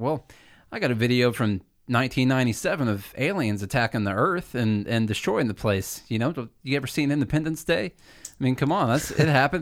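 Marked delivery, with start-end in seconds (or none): none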